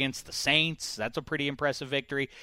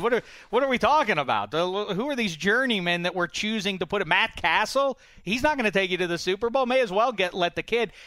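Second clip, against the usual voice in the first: disdainful tone. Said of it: "he said it with such disdain in his voice".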